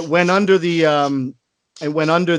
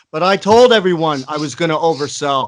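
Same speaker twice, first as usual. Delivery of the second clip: normal talking voice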